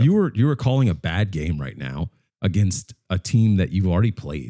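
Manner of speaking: ordinary talk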